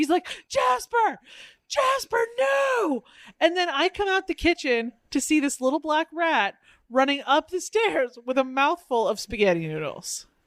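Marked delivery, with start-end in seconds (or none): 0.5-3.0 put-on, very high scream at top of lungs. Retelling a cat owner yelling at the cat: imitating someone screaming at top of lungs. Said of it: "Mitchell screaming at the jazz man, like, at the top of his lungs".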